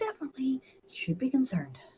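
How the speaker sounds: soft mumble under breath. Player's character mutters before stepping into the light, mumbling under breath. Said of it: "Mumbles under my breath".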